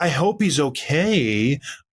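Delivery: mock very slow, sarcastic sympathy, "okay" drawn out. Retelling what the announcers said when the ref pulled him down: imitating sarcastic announcers. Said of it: "I sarcastically".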